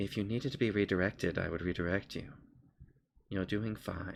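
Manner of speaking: tiny, soft, small little voice. Voicing the little voice that comes up from the object you work with: small little voice. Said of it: "a little voice kind of comes up and goes".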